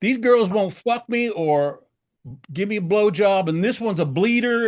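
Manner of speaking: play-acted loud, high, frantic, worked-up complaining rant. Retelling what an angry host shouted about two women: imitating someone freaking out. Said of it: "he's freaking out".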